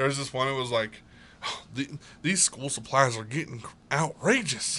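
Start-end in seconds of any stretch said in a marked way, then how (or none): 1.4-4.8 fake Southern father voice. Retelling a TikTok video of a pretend Southern dad: imitating a Southern dad. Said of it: "he pretends to be a Southern dad".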